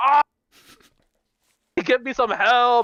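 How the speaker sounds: put-on wounded man's yell, high and drawn out. Retelling what a bleeding man at the front shouted, retelling a yell for help. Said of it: "He started yelling and shit".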